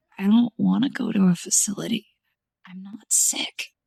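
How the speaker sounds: hoarse, low, raspy muttering under the breath. Reading a story, a daughter answers her mother: low raspy mutter. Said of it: "I muttered in a low, raspy voice".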